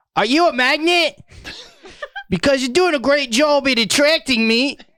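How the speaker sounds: put-on Australian accent. Saying a pickup line as him, in an Australian accent. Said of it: "say him in an Australian a- a- accent".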